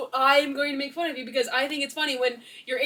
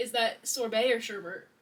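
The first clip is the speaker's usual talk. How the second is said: plain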